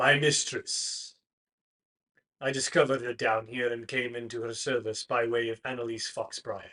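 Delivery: deep, low masculine character voice. Game master voicing a figure answering a player's question: deep masculine voice. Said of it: "The figure speaks in a deep masculine voice".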